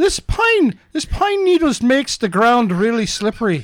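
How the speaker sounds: put-on high Irish accent. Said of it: "I can't do an Irish accent".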